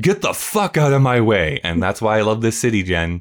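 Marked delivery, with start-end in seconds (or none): 0.0-1.6 mock irritated, angry man's voice yelling. Retelling a man heard on the first morning: imitating an angry man yelling. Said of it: "a very angry New York man yells out".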